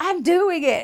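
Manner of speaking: very high, shrill, panicked, frantic scream. Retelling a husband on a 911 call doing CPR: retelling a frantic scream. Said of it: "And he screams".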